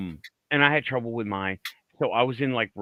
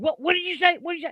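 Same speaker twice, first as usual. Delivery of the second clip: very high, furious, enraged, rapid shout. Retelling the sergeant's reaction to the joke: imitating a furious sergeant. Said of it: "he got so pissed off".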